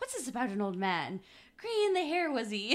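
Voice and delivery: very loud, lilting Irish accent with big pitch swings. Quoting a line Kate says, attempting her Irish accent. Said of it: "I'm gonna try to do the accent".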